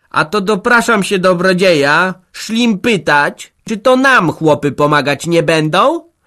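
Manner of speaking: very loud defiant voice. At the head of the weeping women, one addresses the benefactor in a defiant raised voice. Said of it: "Zaczęła hardo podniesionym głosem".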